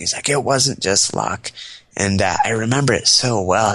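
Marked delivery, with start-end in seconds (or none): 0.3-1.5 put-on old man voice, raised and climbing in pitch. Retelling what an old ranger said, imitating a voice rising. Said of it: "voice kinda rose".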